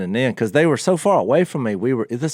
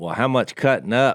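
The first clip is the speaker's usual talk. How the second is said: normal talking voice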